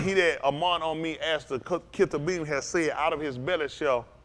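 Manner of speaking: ordinary delivery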